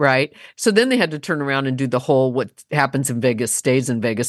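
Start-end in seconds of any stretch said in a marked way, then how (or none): none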